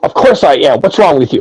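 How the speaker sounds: heavy-handed, aggressive, forceful insistent declaration. Showing the other way to say it: mock forceful insistence. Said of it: "bang it over anybody's head".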